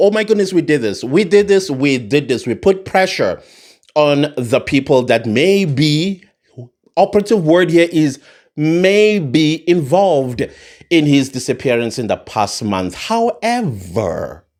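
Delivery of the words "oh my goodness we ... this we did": plain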